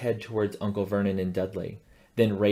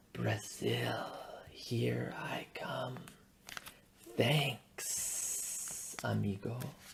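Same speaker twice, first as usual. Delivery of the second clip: low, hissed, near-whispered snake voice; 11 dB quieter than usual. Reading a story aloud, the escaping snake speaks in a low hissing voice. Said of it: "a low, hissing voice said".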